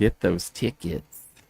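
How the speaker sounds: quiet put-on sermon voice. Plugging tickets for this weekend's event, Letterkenny preacher voice. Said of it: "the preacher from Letterkenny".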